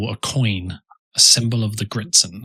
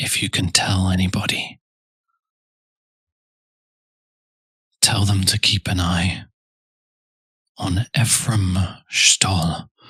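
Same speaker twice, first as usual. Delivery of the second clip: hushed stage whisper; 2 semitones lower than usual. Game master voices a woman leaning close to a player's ear, half-whispering. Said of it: "And she whispers".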